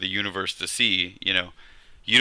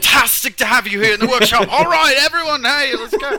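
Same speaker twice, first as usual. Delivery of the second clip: put-on very loud, high-pitched belting in an English accent; 9 dB louder than usual. Doing an impression in an English accent: Alex Steele impression. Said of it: "your English accent was rubbish. That was bang on".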